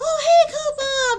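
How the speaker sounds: mock shrill, very high, loud and excited voice. Speaker reenacting greeting someone who came into her chat, retelling her high excited voice. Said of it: "I have a high pitched voice when I get excited".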